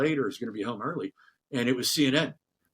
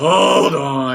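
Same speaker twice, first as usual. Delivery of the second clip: loud, exasperated, audibly eye-rolling, impatient brush-off; 2 semitones higher, 14 dB louder than usual. Retelling a phone call about a job interview, the speaker acts out the caller: mock-exasperated. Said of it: "I could hear her rolling her eyes".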